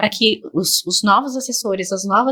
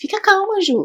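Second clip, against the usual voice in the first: very high, jittery, nervous squeak; 10 semitones higher than usual. Retelling calming a beginner whose blood draw went wrong: imitating own nervous voice. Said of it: "E eu nervosa num nível".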